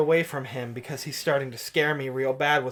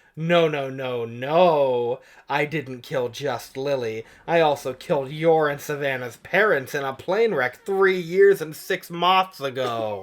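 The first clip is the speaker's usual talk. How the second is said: normal talking voice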